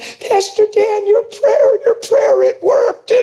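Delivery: very high, squeaky, tearful crying voice. A pastor retelling a woman's phone message to him, imitating a high squeaky crying voice. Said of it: "The high-pitched, squeaky voice crying".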